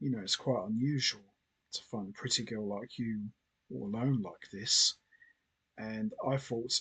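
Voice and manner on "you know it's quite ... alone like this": icy, cold, chilling, threatening delivery. Retelling a film scene, quoting Superman speaking to Lana: cold Superman voice. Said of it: "he very coldly says to Lana".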